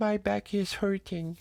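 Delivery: tiny, small, faint, very high little voice. Retelling complaining of back pain on arrival, in a tiny little voice. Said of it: "avec une petite voix de rien".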